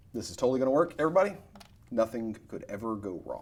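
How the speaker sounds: sarcastic, ironic tone of falsely sure confidence. Announcing a risky game move to everybody: sarcastic. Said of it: "That is, uh, sarcasm".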